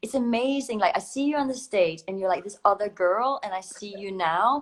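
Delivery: American-accented speech.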